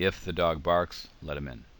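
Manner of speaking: short, clear pause right after barks. Comma lesson on conditional sentences: a pause after barks. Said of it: "So you can hear the pause there too".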